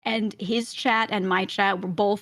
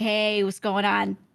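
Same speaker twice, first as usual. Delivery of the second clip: put-on Italian accent, slower. Greeting a man as he walks past, in a put-on italian accent. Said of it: "And I say it in like, an accent".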